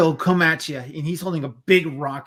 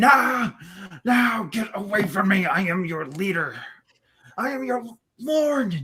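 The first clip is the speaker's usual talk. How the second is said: high, terrified, panicked screaming; 5 semitones higher than usual. Narrator voicing a leader surrounded and bitten by wolves, screaming. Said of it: "As he starts to scream".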